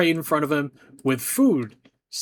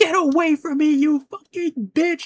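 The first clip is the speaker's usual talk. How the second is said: full-throated, very high screech at the top of the lungs; 13 semitones higher, 3 dB louder than usual. Retelling a man screaming at a nurse while you collected trays; retelling a top-of-lungs scream. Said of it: "scream at the top of his lungs".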